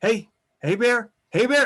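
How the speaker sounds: rising, building calls. Demonstrating how to call out to a bear, getting louder each time. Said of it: "bringing it a little louder each time".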